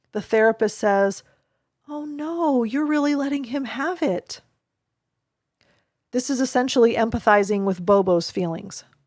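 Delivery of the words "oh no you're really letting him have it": soft, quiet, sorrowful voice. Demonstrating an inaccurate therapist reflection to a child hitting Bobo: quiet, sad voice. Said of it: "in a quiet and sad voice".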